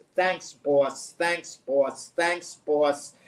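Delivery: wry, mildly sarcastic, eager-to-please tone. Imitating a head coach answering his team owner: sarcastic imitation of a coach. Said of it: "I'm being a little sarcastic in the way I'm putting it".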